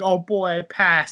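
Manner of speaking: slow, drawn-out, all-emotional gushing voice. Recapping a cartoon episode about extra credit, quote SpongeBob: mock-emotional SpongeBob impression. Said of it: "SpongeBob gets like all emotional".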